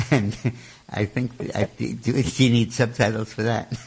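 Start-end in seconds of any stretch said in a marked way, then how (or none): none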